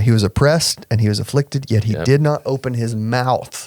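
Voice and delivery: ordinary talk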